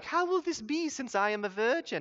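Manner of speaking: put-on sugary sweet voice. Describing how Mary speaks in every movie: mock very nice Mary voice. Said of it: "in this like very nice".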